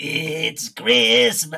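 put-on slow, drawn-out, creaky yell.

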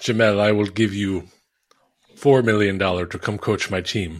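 put-on Russian accent, rich tycoon voice. Playing a rich oligarch speaking to Jamel, Russian oligarch accent. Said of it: "I love your oligarch voice".

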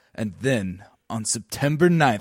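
sinister, deep documentary narrator voice, dropped low. Imitating the host of Loose Change, in the Loose Change evil host voice. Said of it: "the evil host voice".

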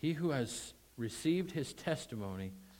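emphatic stress on received, lifted and weighted.

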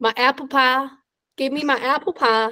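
slow, exaggerated Southern American drawl. Asked what americans sound like, answering in a very southern american accent. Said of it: "I go very Southern".

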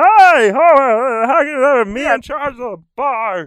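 very high, very loud, drawn-out booming voice from the throat. Explaining voice placement while demonstrating a character: Barney from The Simpsons voice. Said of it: "like in the Back of the throat".

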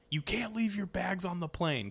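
put-on high, loud, scolding yell. Recalling a man on the tarmac yelling at passengers, imitating someone yelling. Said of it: "like yelling".

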